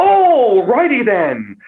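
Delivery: over-the-top, high-pitched, hammed up with big swoops. Giving an impression everybody can do, over-the-top Jim Carrey voice. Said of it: "Jim Carrey's just over the top".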